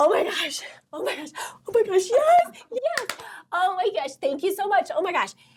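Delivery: thrilled, very high-pitched, excited gushing voice. Explaining a mirror practice of celebrating goals as if achieved, re-enacting excited celebration. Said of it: "and so I was just like".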